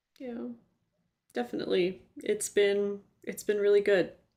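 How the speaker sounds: tearful, choked-up voice on the edge of crying. Reflecting on people still caring about their contribution, speaker answers choked up, teary. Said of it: "Are you crying?".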